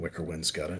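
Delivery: very quiet, hushed half-whisper. Voicing a character who half-whispers a reply to a half-whispered question: half-whispering back. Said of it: "Moon Planner whispers back".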